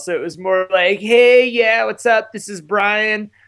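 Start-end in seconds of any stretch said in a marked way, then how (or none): 1.0-3.3 higher-pitched Southern California bro voice. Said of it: "really going for that Brian Deegan, broed out Southern California voice".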